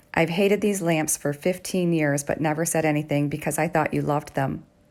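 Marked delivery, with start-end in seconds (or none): none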